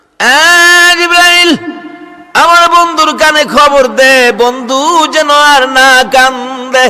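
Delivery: calling out.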